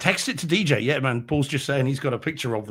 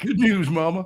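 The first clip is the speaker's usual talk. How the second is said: put-on pitched-up American accent; 5 semitones higher than usual. Quoting a line from a horror movie: American accent. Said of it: "You even had the American accent".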